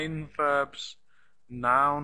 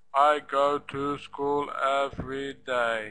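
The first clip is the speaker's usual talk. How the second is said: flat, unstressed robotic voice. Explaining English word stress, showing how not to speak: flat robot voice. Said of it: "I don't speak like a robot".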